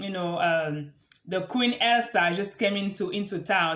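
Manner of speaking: usual speaking voice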